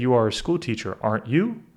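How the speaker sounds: rising tune at the end, lifting on "you". Showing an English tag question from a Duolingo test, rising pitch at the end. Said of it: "Ending up like that. That's how I know it's a question".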